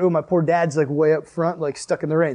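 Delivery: ordinary talk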